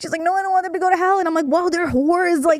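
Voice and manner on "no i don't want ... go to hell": mock tearful, sobbing little girl's voice. Recounting a girl's reaction back in first or second grade, imitating a girl crying. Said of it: "And she started crying".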